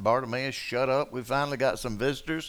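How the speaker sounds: ordinary talk, nothing marked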